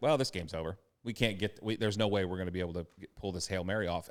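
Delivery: normal talking voice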